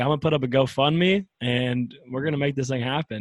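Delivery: ordinary talk, nothing marked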